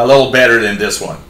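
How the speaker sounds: plain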